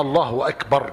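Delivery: ordinary talk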